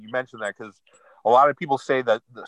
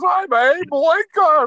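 very high-pitched voice pushed way up; 4 dB louder than usual. Showing the others how Abe Lincoln talked, you introduce yourself in a high-pitched Abe Lincoln voice. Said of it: "He talked like this".

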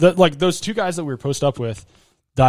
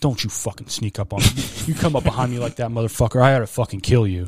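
put-on menacing, threatening male voice; 4 semitones lower than usual. Retelling how a man reacted when they walked by him, imitating a threatening man. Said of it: "Like very threateningly".

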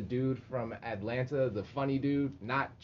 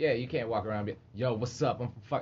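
plain

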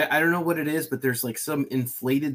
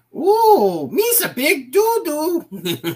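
put-on goofy alien voice, higher and louder; 14 semitones higher, 8 dB louder than usual. Quoting Jar Jar Binks after others mention him: Jar Jar Binks voice. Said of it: "He's like".

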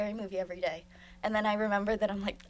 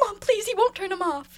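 acted pleading scream, much higher; 11 semitones higher, 6 dB louder than usual. Speaker retells calling out to their mom, retelling screamed pleading. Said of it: "heard me screaming and I was like".

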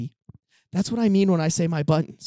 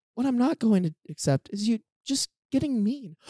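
put-on overly polite, calm, reasonable tone, pitched up; 5 semitones higher, 3 dB quieter than usual. Acting out a calm girlfriend's text message: imitating a super polite text. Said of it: "super pol-".

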